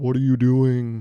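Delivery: deep, foreboding, ominous booming voice. Voicing an imagined light that beams down from nowhere: deep ominous voice. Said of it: "a deep, ominous voice and goes".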